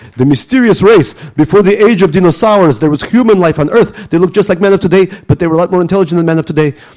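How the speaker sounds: put-on high, loud, thick Russian accent.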